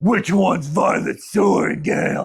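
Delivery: big, brutish voice, deep and slow. Recapping a story, voicing the brute who calls out from behind, in a big brutish voice. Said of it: "we hear this big brutish voice".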